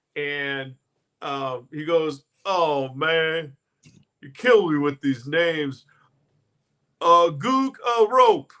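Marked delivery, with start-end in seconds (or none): 2.5-8.4 loud commentator voice. Retelling Charles Barkley doing post-game highlights: Charles Barkley impression. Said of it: "do you have a Barkley impression?".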